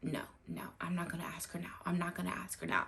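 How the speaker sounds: rattled-off fast, hushed whisper. Retelling what he kept whispering when the guests came in, imitating his whisper. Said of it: "And he kept whispering".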